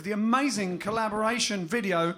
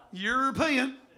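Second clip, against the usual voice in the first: Southern American accent; 4 semitones higher than usual. Delivering a joke's punchline to a co-host, in a southern american accent. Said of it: "Has to be said with a Southern American accent".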